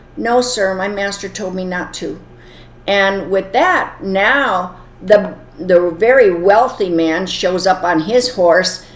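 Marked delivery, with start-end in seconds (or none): none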